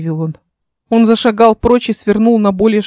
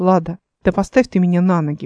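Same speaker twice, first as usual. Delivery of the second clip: usual speaking voice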